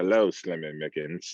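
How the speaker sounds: very low, deep, suave movie-villain voice. Suggesting how someone should have entered the interview, Bond villain voice. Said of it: "like a Bond villain and just be like".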